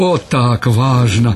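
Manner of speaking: joyful. The rear stretcher-bearer, falling into step with the front one, says: joyful. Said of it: "радостно сказал задний".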